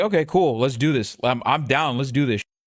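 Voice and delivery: plain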